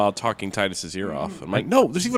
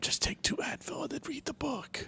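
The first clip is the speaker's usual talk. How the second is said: very soft, hushed, barely voiced whisper; 13 dB quieter than usual. Urging another player to read the book: whispering. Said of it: "Why are you whispering".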